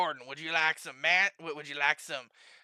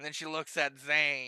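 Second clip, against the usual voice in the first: ordinary talk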